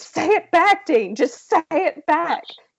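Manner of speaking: high-pitched scream. Retelling own reaction while watching the show: imitating screaming. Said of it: "and I'm screaming".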